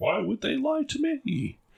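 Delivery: very high voice, bravado giving way to doubt. Speaker describes a man's bravado turning false, imitating someone's doubt. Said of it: "You can hear the sound of doubt as he's like".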